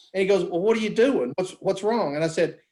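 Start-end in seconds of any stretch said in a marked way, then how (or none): none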